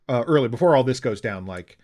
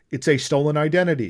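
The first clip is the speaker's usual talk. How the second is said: ordinary delivery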